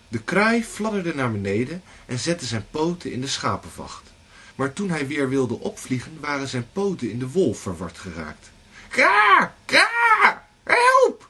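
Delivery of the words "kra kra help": very loud, very high, shrill, squawking crow cawing. A crow with its feet tangled in wool calls out, cawing for help. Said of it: "kraste de kraai toen hij niet kon loskomen".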